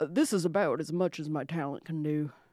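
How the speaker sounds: low, deepened, cartoon-style put-on voice. Showing how far your voice acting talent goes for a cartoon, put on a low voice. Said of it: "I'm pretty good at like doing a low voice".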